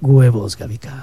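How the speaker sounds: husky, coy booth-speaker voice.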